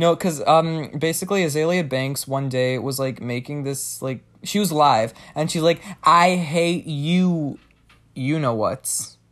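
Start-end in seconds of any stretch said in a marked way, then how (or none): 6.0-9.1 mock loud and proud voice. Retelling what someone said while live: imitating someone saying it loud and proud. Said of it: "she was saying it really loud and, like, proud".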